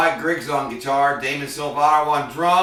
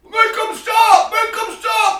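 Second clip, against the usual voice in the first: mock enraged, very high-pitched furious yelling; 4 dB louder than usual. Speaker retelling a club owner cussing at him, imitating a furious club owner. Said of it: "he is furious".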